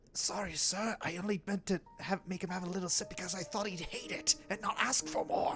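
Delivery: very quiet, hushed whisper under the breath. In a tabletop game, a character apologizes to another character: whispered under breath. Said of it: "He whispers to Gregor under his breath".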